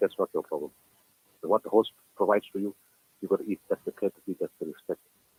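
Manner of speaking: ordinary delivery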